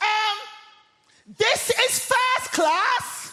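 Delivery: shrill top-of-voice shout, very high and drawn out. Speaker retelling how a woman in first class shouted at them, imitating a woman shouting. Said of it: "at the top of her voice, she shouts".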